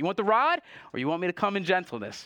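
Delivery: sarcastic.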